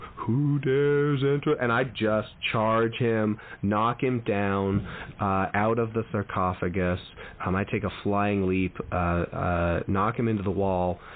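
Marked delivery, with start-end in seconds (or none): 0.1-1.5 put-on spooky vampire voice, much higher. Speaker imagines the Viscount rising to speak, in a spooky vampire voice. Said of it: "getting ready to do a spooky voice".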